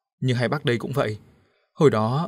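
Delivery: ordinary delivery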